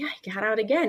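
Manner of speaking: put-on casual, offhand, nonchalant tone. Retelling telling a friend the horse got out again: imitating a casual offhand tone. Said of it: "And I just said it, like, whatever".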